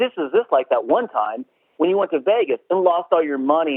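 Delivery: ordinary delivery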